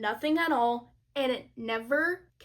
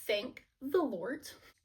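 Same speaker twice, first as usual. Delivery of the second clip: ordinary talk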